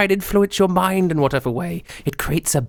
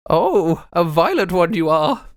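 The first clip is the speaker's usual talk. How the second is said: put-on elderly shopkeeper lady voice. Voicing an old Velunari lady greeting a customer: old lady shopkeeper voice. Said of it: "there is an old lady working there".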